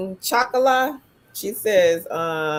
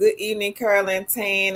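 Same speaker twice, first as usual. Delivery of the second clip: ordinary talk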